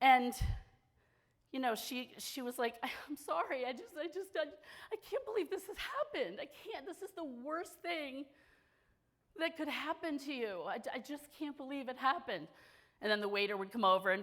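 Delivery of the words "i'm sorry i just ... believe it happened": mock uncontrollable crying, high, sobbing, stammering, broken words. Retelling what a crying companion said at lunch: imitating Sarah crying uncontrollably. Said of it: "she was crying, like, uncontrollably".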